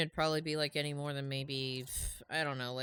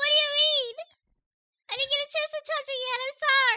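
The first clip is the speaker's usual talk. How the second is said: loud, high-pitched AI voice; 9 dB louder than usual. Apologizing for not playing a game yet: sounding like Tiny Tina. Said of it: "Why do you sound like Tiny Tifa, w-, Tiny frickin', uh, Tina".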